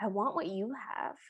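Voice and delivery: soft, very sad, wistful and downcast voice. Retelling a film scene, voicing Anastasia's line: imitating Anastasia speaking sadly. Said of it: "Anastasia just goes very sadly".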